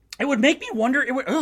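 voice cracking and breaking. Ranting about a team's late need for a wide receiver, voice cracking. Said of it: "voice cracked".

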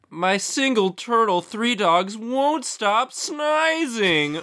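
very high, slow, forlorn sad voice. Asked to do a sad face noise, sad voice. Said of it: "Do a sad face noise".

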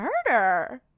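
mock genuinely startled, shocked and surprised, one word. Retelling a scene where a suspect first hears of murder: imitating shocked surprise. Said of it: "you sound genuinely surprised".

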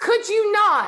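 very high, shrill, very loud yelling. Voicing a character who leans around the corner: yelling in character. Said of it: "she just leans around the corner and yells".

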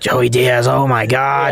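slow, rough, rasping put-on voice. Retelling what Jones said, in a raspy Jones impression. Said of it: "He has like that raspy voice".

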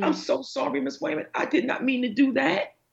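mock teary, remorseful, pleading childlike crying. Recalling students apologizing to the speaker, imitating a crying student. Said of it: "they would cry actually".

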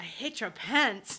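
Spanish accent impression. Retelling a funny thing someone said, Spanish accent impression. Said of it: "Was that your was that your Spanish accent?".

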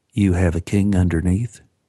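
whispering. During a card game, Sally stares at the narrator and asks, whispered. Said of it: "Sally stared at me and whispered".

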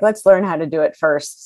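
normal talking voice

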